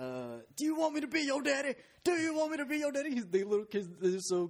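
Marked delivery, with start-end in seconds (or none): 0.0-3.2 play-acted very high, swooping drill-sergeant shouting. Retelling an Instagram clip of a drill sergeant yelling at a kid, imitating the yelling. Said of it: "the drill sergeant yelling at a kid".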